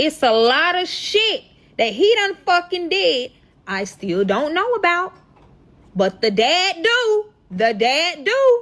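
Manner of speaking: high, slow dramatic delivery.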